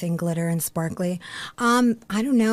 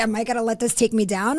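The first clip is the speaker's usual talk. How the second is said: ordinary delivery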